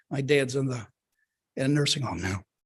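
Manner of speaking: emotion catching mid-sentence, choked-up and halting. Telling the group that their dad is in a nursing home now, choked up. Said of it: "I apologize for getting choked up".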